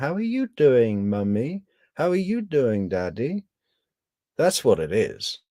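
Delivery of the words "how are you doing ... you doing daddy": put-on little girl voice, about five years old. Imitating a woman speaking to a parent figure, in a little girl voice. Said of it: "it's a it's a little girl voice".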